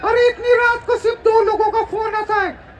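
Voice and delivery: ventriloquist puppet voice. Ventriloquist's monkey puppet answers its partner's question, monkey puppet voice. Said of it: "ये है मेरा monkey दोस्त puppet, जिसका नाम है [name]।".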